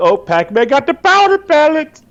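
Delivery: high, slow, swooping, sing-song game-announcer voice. Recalling in-game announcements in the voice: Mario voice. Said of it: "He does the voice".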